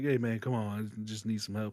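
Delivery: hushed, low, sidelong stage whisper. Recounting how one man quietly spoke to another, retelling a half-whisper. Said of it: "he's like whispering to him".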